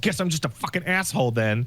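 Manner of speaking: grumbled, sour, angry mutter under the breath. Retelling how someone stood up and left: imitating someone muttering angrily. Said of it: "he mutters under his breath".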